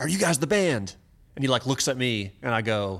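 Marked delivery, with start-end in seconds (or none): 0.0-0.9 play-acted, high, crazy, wildly animated energy. Retelling how an excited guy asked about the band: imitating animated excited guy. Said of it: "real crazy animated energy".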